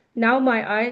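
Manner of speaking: usual speaking voice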